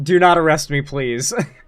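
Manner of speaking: put-on, overly polite, pleading tone. Retelling begging a security guy on the platform: imitating an overly polite plea. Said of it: "I was, like, so polite".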